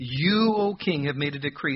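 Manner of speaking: the word "you" strongly stressed. Reading a verse aloud to notice a word: strong emphasis on you. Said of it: "I'm going to emphasize the word you".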